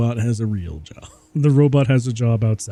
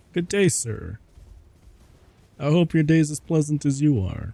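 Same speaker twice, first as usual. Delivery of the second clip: mock-polite, sarcastic and mocking voice; 4 semitones higher than usual. Answering a rude game character who threw something: mocking voice. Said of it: "the same voice that I use when I mock".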